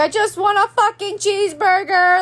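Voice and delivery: tearful, furious, crying scream, pitched high. Retelling being kept unfed until let out, retelling own screaming. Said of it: "I start screaming".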